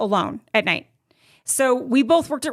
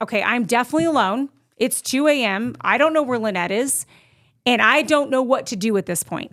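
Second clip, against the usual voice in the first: ordinary delivery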